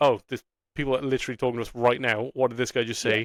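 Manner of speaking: ordinary talk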